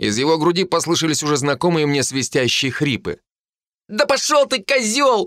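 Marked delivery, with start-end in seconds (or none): 3.9-5.3 very high, slow, tearful shout. A man suddenly curses the narrator, shouting with tears. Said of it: "вдруг выкрикнул он со слезами в голосе".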